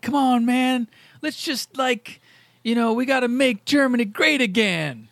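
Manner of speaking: high, laid-back, cool-cat beatnik voice. Describing an auditioner delivering a line to Goebbels, in a laid-back beatnik voice. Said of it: "this very beatniky guy delivering the line".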